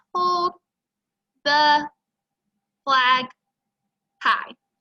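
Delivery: robotic, too-slow reading. Showing how not to read aloud, slow, robotic reading. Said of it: "That's a little too slow and I sound very robotic".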